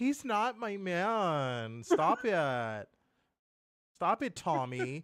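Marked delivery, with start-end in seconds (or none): 0.0-1.8 put-on, sassy, high tone with "man" drawn out. Mimicking how another speaker just denied a tease: imitating a sassy denial. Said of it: "Listen to how he said that".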